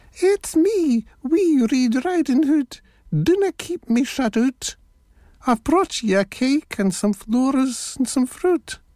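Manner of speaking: very high, wee, squeaky put-on voice. Narrator reading the wolf at Granny's door, the wolf's put-on wee squeaky voice. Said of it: "The wolf put on a wee squeaky voice".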